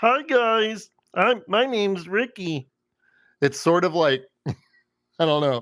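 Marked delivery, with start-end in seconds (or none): 0.0-2.7 high-pitched cartoon puppet frog voice. Demonstrating the voice he practiced for Ricky, Kermit the Frog voice. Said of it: "it kind of sounded like Kermit the Frog".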